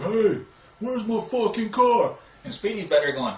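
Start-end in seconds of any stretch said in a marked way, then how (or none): 0.0-2.1 very high, very slow, drawn-out complaining drawl. Retelling how Rick Slagle talked about his missing car: imitating Rick Slagle's way of talking. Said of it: "Rick Slagle talks like".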